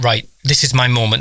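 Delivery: ordinary delivery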